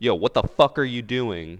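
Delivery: high, loud yelling. Retelling what players say in voice chat: imitating someone yelling. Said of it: "And they start yelling at people".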